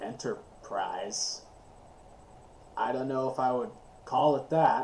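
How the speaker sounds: deep, gravelly voice rumbling low in the chest. Narrating a game scene, a man looks up and answers, deep gravelly chest voice. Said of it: "he has a deep, gravelly voice that comes from very, very low in his chest".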